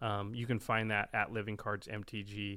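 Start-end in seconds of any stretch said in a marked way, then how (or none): none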